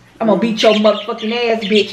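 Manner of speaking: fast, rattled-off, threatening delivery of bitch.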